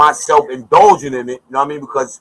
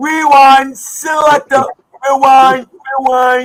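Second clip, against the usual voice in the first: put-on Jamaican accent, high-pitched, slow and drawn out; 11 semitones higher, 4 dB louder than usual. Starting a recap on stream, calling for a rewind: put-on Jamaican accent. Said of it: "In my Jamaican voice".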